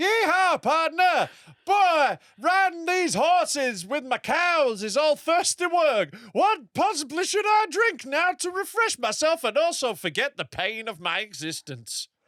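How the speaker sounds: put-on cowboy voice. Opening a sponsor skit for the episode, playing a cowboy: cowboy voice. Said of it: "I was a cowboy that's travelled".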